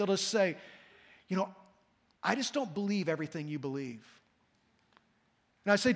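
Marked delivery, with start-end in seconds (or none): 1.3-4.0 hushed, confiding, leaning-in half-whisper. Retelling what a new visitor leans in to say: imitating someone half-whispering. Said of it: "they wanna whisper this because they don't want anybody to hear".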